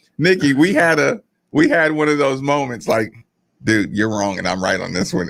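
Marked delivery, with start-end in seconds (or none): none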